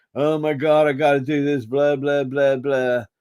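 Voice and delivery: put-on voice of a man almost crying. Retelling a movie bar scene, imitating a man almost crying. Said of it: "the guys are almost crying".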